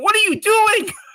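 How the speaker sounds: shrill, very high-pitched, loud scream. Retelling a reaction to a goal against the team: retelling own screaming. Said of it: "I was screaming, like".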